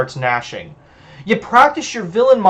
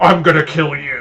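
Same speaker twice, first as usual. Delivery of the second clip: mocking, growled, growly vampire accent; 3 semitones lower than usual. The narrator mocks a threatening vampire by imitating his growly accent. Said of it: "I imitate his growly accent".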